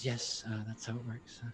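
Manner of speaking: hushed, very soft, embarrassed, sheepish voice. Voicing a woman answering that he bills the agency directly: embarrassed. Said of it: "she kind of embarrassedly says".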